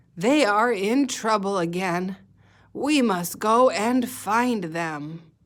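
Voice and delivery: put-on aged storybook character voice. Teacher reading a story line aloud, old-sounding voice. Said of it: "Why did I make my voice sound old?".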